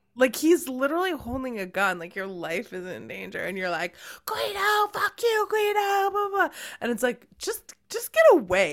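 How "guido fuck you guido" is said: mock taunting scream, much higher, slower. Retelling a girl taunting an armed man from a car window, reenacting her scream. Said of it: "she's screaming out the car window, like antagonizing him".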